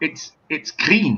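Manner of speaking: terrible, clumsy put-on Scottish accent. Retelling how Scotty sniffs a bottle of Romulan ale: Scotty voice, terrible Scottish accent. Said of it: "my Scottish accent's terrible".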